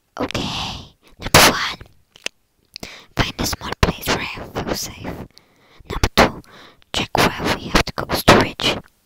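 whispering. Playing a game with a crewmate nearby, deciding to whisper. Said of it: "but I'm gonna whisper".

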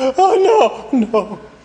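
howling. Crying out in his sleep before being told to wake up, howling. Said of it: "Why are you howling like that?".

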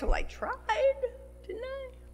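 very high-pitched, whining, complaining tone. Giving an example of the wrong way to respond, in a whiny voice. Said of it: "in a whiny voice".

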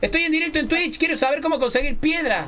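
put-on dopey fool voice, very high-pitched.

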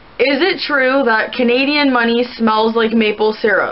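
ordinary delivery

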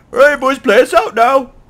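bad, very high, very loud, shrill shout. Joking with co-speakers about a phrase, doing a bad Pyro impression. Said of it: "That was a really bad Pyro impression".

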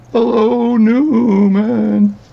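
loud squeal with the name drawn out. Doing impersonations for the listeners' entertainment, give a really bad Jerry Seinfeld impression. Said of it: "the Seinfeld one's really bad".

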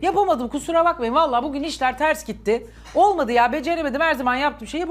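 ordinary talk

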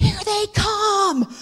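high, slow, drawn-out yell.

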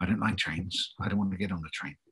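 put-on whispering small child voice. Retelling what a five-year-old whispered before a night train scene: imitating Ellie Mae whispering. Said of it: "she whispers to me".

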